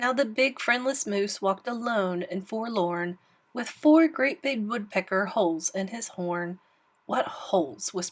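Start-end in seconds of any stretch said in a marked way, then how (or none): 7.1-7.9 hushed, breathy whisper. Reading a story aloud, a squirrel spotting holes in a horn: whispering. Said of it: "whispered Herman".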